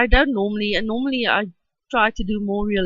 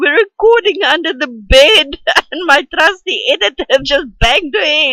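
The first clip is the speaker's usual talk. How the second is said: talking through laughter, higher and louder; 6 semitones higher, 8 dB louder than usual. Explaining that the editor banged her head, laughing while talking. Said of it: "I'm sorry, I'm laughing".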